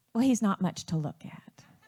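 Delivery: ordinary talk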